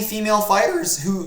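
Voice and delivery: cracked voice breaking up high. Previewing a fight card, voice cracking badly. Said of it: "my voice just cracked badly there".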